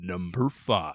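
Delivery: grand, dramatic, deep, epic put-on announcer voice. Announcing the next list entry in a deep epic voice. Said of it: "I'll do my deep epic voice".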